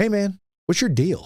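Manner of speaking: put-on Southern accent, pitched very high. Retelling how the chief confronted him after days of avoidance, in a Southern accent. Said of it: "He's got that Southern accent".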